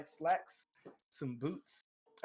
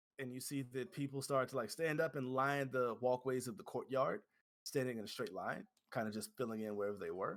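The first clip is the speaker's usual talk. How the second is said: normal talking voice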